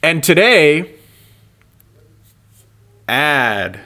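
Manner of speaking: very slow, drawn-out words. A podcast host announces today's episode: speaking very slowly. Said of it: "why are you speaking so slow?".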